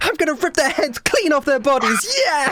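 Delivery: very high, shrill, overexcited, hyped-up war cry. Imitating a fellow player getting too into it: imitating overexcited battle shouting. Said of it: "she gets a little too, like, into it".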